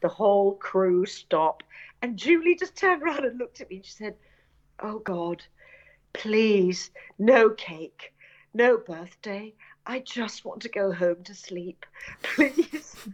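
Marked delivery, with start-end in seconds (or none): 4.8-12.9 put-on muttering under the breath. Retelling Julie's plea at a 3 a.m. birthday cake: imitating Julie under her breath. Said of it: "she said it under her breath".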